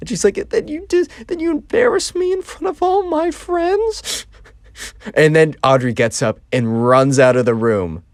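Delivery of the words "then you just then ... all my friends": put-on tearful, welling-up voice, higher pitch. Retelling a birthday girl's complaint after she starts to well up: imitating someone welling up. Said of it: "starts to, like, well up".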